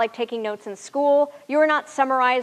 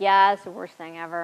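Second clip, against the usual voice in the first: low, flat, expressionless deadpan delivery; 5 semitones lower than usual. Explaining interview answers, demonstrating people who deadpan. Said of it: "The people who deadpan".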